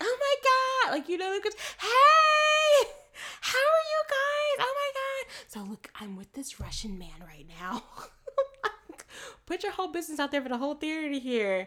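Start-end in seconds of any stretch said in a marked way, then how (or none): 0.0-7.8 put-on shrill, brash, loud, high, swooping party-girl chatter. Retelling how a woman talked loudly in the theater, imitating a loud party girl. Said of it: "She came in loud talking in the theater".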